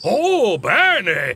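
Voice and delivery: jubilant, delighted outburst. Narrator reads Scrooge answering a boy, exultant. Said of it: "esultò Scrooge".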